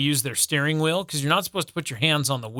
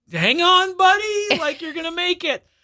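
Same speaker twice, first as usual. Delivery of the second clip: squeaky, very high, encouraging cheering voice; 4 dB louder than usual. Retelling cheering on a car antenna at the car wash, retelling cheering on antenna. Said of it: "cheering on my antenna".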